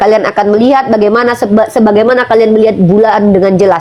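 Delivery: ordinary talk, nothing marked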